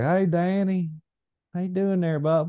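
high-pitched, heavy down-home country voice. Remembering how he would greet Danny, doing a country Stephen Drew impression. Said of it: "He's as country as they get".

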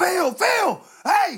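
high-pitched, eager, excited calling out. Retelling a fan running up at the bus: imitating an excited shout. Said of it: "this guy comes running up".

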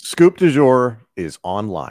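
loud, slow, booming broadcaster voice. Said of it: "the Tom Hannifan broadcast voice is really good".

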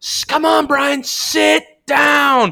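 high, drawn-out, heckling holler. Retelling a fan behind the bench: imitating a fan yelling. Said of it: "He was yelling at him".

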